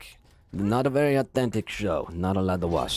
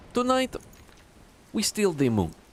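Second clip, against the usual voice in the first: very high-pitched voice with a put-on Russian accent; 10 semitones higher than usual. Defending an accent as a movie villain quote: Gru voice. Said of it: "it's Gru".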